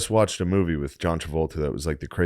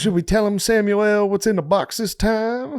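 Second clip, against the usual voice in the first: very high-pitched, badly put-on voice; 4 dB louder than usual. Imitating how someone acts now, like a bad guess: imitating John Travolta.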